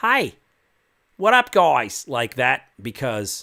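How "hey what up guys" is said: over-the-top cartoonish Australian accent, very high and very loud. Explaining how they do an Australian accent, showing the wrong way: cartoonish Australian accent. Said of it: "not like".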